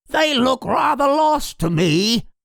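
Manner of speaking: very high, strange, raspy puppet voice. A puppet turns to its companion and speaks in a strange raspy puppet voice. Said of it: "spoke in a strange and raspy voice".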